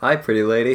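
mild, gentle, low-pitched soft delivery. Retelling what an enormous stranger said when bumping into her; very soft voice. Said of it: "In the softest voice goes".

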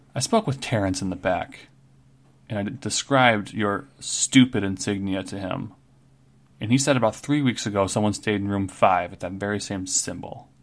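normal talking voice

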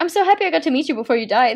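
mock, exaggerated, overdone terror, laid on thick. Retelling a scene's commentary: imitating Richie, scared and exaggerated. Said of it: "very scared in the entire time".

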